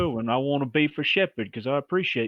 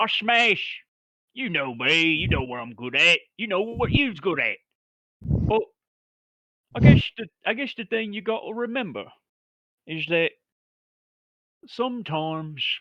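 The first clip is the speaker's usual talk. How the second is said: rambling, big-hearted, earnest, slangy orc brawler voice; 4 semitones higher, 3 dB louder than usual. An orc in a push-up position talks to his bruv, orc character voice. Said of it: "I'm an orc. I smash. / And [name] is gonna get down in a, a push-up position in front of his bruv".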